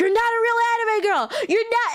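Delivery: put-on very high, indignant, furious shouting. Retelling an argument where a stranger got mad: imitating someone yelling. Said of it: "he was yelling at me".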